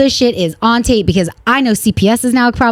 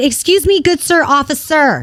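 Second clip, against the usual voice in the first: put-on sassy, pointed, slow, snippy tone; 4 semitones higher than usual. Retelling what was said to a police officer: imitating her own snippy tone. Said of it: "Just like this, 'cause I'm kind of a bitch like this now".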